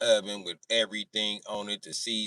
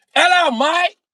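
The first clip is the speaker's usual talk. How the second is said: put-on British accent, very high, shrill, very loud; 18 dB louder than usual. Recounting a car ride, greeting a man in a fake british accent. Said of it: "I do the British accent all the time".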